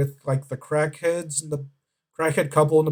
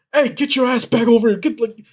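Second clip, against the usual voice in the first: put-on high-pitched shouting; 8 semitones higher, 4 dB louder than usual. Retelling a neighbor chasing his runaway chicken: imitating a neighbor yelling. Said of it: "yelling at the chicken".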